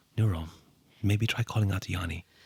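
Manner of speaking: whispering throughout. Voicing a character who tells a companion to call out: whispering. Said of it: "whispers to Nero".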